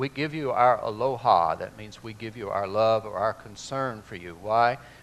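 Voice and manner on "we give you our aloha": plain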